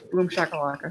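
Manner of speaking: hushed, awkward stage whisper, half-whispered. A player's character half-whispering the activation word to a dagger, awkward half-whisper. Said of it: "very awkwardly whisper to my dagger".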